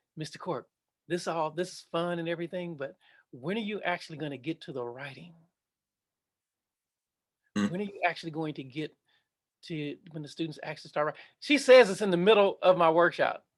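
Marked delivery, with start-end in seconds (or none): 0.2-11.2 quiet whispered voice. Speaker retells what a woman whispered in his ear during his workshop, retelling a whisper. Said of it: "she whispers in my ear".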